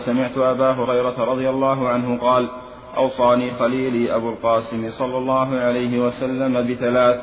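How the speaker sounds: ordinary talk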